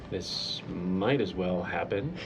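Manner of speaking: slow, grumbled mutter under the breath. A character mutters where he thinks the others can't hear; muttered under breath. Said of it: "I mutter under my breath".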